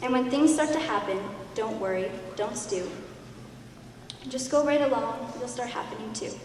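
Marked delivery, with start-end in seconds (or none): none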